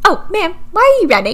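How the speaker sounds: incredibly high-pitched put-on voice. Acting out a scene of someone running from a car, incredibly high-pitched voice. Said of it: "an incredibly high-pitched voice".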